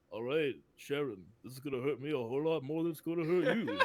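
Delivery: mumbling Philadelphia boxer voice. Retelling a blooper, the speaker quotes a man who switched voices: Rocky voice. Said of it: "started talking in Rocky's voice".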